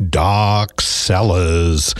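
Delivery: creepy, spooky announcer voice. Radio host announcing a Halloween wine event's name, spooky voice. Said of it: "get into spooky voice".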